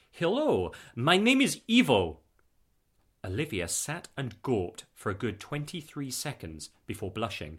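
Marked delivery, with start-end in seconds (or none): 0.2-2.2 put-on thick, heavy Eastern European accent, slow and deliberate. Reading a story, voice the visitor introducing himself: heavy Eastern European accent. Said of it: "in a heavy Eastern European accent".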